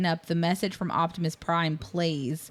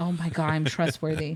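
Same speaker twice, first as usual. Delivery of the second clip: put-on excited voice; 2 semitones lower than usual. Retelling a movie scene where a boy is called trustworthy: imitating an excited character. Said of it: "And he's so excited".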